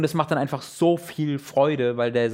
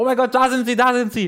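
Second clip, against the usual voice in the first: very high, loud, alarmed, high-pitched shout; 10 semitones higher, 5 dB louder than usual. Recalling others shouting out on spotting them, retelling a loud shout. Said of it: "haben halt laut gerufen".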